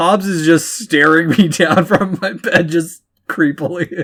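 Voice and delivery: talking while laughing through the words. Explaining why they are laughing during the talk: laughing while talking. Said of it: "I'm sorry if I'm laughing".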